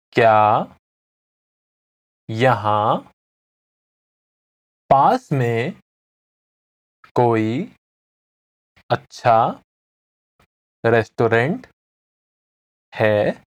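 very slow, low, halting, broken-up delivery. Teaching a Hindi phrase for the listener to repeat along, the speaker says it very slowly. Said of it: "Now I'm going to say it again slowly".

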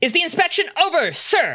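very high, firm, assured, swooping confident voice. A character asks aloud whether the inspection is over, strong, confident voice. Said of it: "in a very strong, confident voice".

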